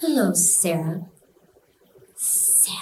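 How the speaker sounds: slithering, hissing snake voice drawn through the teeth. Retelling a night visit, imitating the presence's voice: slithering snake-like voice. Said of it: "Like that".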